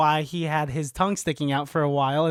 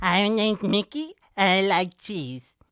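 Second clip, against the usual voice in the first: put-on dog voice, higher; 4 semitones higher than usual. Voicing what a pet dog would sound like, imagined dog voice. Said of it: "this is how he would sound".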